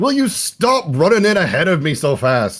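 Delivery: high, shouted in a character voice. Playing a character charging into a fight, yelling at an ally: character yelling. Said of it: "he's yelling".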